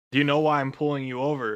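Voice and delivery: ordinary talk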